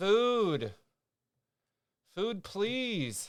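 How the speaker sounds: high cat voice with the word "food" drawn out. Imagining a cat speaking through an AI collar translator: cat voice through AI collar translator. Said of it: "his A I collar activated voice translator".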